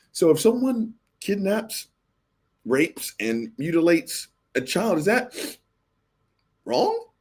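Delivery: high, smug, mocking, twisted rising inflection. Retelling a debater's question to a woman: imitating a mocking voice inflection. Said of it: "with this kind of fucked up ass voice inflection".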